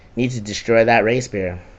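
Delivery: ordinary delivery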